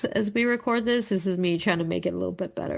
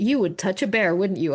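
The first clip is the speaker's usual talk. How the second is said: mock-angry, faster. Retelling how her husband reacted to her, imitating his anger. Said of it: "my husband was so mad at me".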